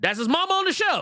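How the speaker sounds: shrill, very high, loud shouting. Telling Carter whose mama is on the show, yelling. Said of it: "Don't yell at me".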